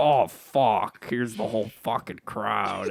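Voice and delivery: put-on flustered comedy character voice. Imagining a comedian doing his usual role on stage: Tim Robinson impression. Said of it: "played that kinda same role".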